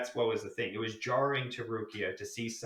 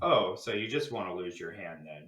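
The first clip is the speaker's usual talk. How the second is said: put-on sarcastic tone, lower pitch; 3 semitones lower than usual. Retelling a character's reaction in a scene, acting out a sarcastic remark.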